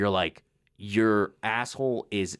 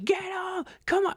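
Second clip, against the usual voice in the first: mock frantic freaking-out, voice very high. Describing a movie scene, speaker acts out the dad: mock freaking out. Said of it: "the dad was like freaking out".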